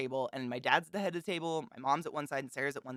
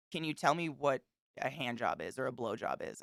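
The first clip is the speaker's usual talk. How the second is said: acted, dead-serious, matter-of-fact deadpan tone. Retelling someone asking the speaker's dad a question at dinner, imitating a deadpan question. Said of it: "it was just a deadpan".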